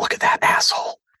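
put-on loud stage whisper. Retelling what a parent at the zoo said: imitating a stage whisper. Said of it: "basically a stage whisper".

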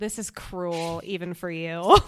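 low, flat, bone-dry, drawn-out deadpan. The speaker quotes a favorite moment of hers from the drama: quoting a line deadpan. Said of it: "I just imagine that so deadpan".

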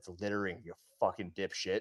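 loud stage whisper. Retelling what was said into a litterer's ear: retelling a loud whisper. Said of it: "I whisper in his ear, like, kinda loud".

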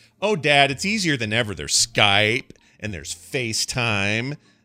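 slow, drawn-out, deliberate voice. Retelling what his daughter would say about moving away: imitating his daughter's voice. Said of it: "Is that how she sounds?".

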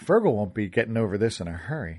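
plain

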